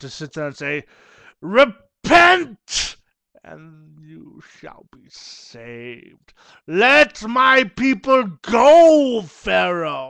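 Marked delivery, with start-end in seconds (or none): 1.4-10.1 bad booming, very slow delivery, "go" stretched out. Doing bad impressions of Charlton Heston: bad Charlton Heston impression. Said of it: "to do bad impressions of him".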